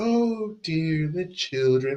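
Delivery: soft, high, slow and unhurried nanny voice. Describing the ideal nanny's voice, a soft-spoken Mrs. Doubtfire voice. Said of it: "that quintessential soft spoken".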